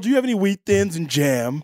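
smarmy put-on rich-boy voice. Doing a Chuck Bass impression in a contest: swarmy Chuck Bass impression. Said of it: "My Chuck Bass impression is a, a, more swarmy".

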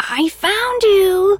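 put-on little squeaky, high, childlike voice. Narrating a story, the reader voices a searcher at a headstone in a squeaky childish voice. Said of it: "He squeaked his childish tone of voice again".

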